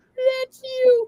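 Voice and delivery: very high squeak choked with laughter. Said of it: "he was laughing so hard that he couldn't even talk".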